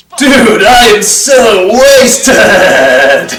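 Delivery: put-on drunk turtle voice. Voicing Raph on screen after someone asks what's going on with him: pretending to be drunk Raph. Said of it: "what's going on with Raph over there?".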